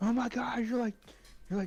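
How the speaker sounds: high-pitched scream. Retelling how mom screamed at them: imitating mom screaming. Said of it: "my mom was screaming at me like".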